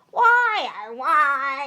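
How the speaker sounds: complaining voice with "why" drawn out. Imitating how complaining viewers sound on Points of View: Points of View complainer voice. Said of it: "they do this voice".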